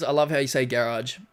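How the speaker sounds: normal talking voice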